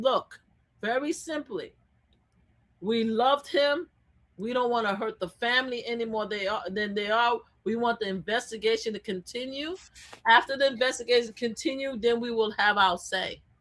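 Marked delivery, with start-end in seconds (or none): none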